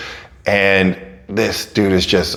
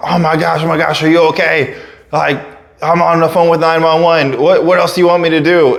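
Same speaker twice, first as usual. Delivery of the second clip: mock screaming man, much higher pitched; 9 semitones higher, 3 dB louder than usual. Retelling how the guy who hit you came over on the phone, imitating him screaming. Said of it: "coming over screaming and on the phone".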